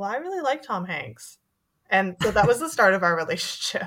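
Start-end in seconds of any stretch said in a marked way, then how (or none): 0.0-1.4 barely audible, very soft, slightly high voice. Recounting a reply to the person sitting across, retelling a very quiet remark. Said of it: "I think I just very quietly went".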